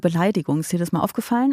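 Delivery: ordinary talk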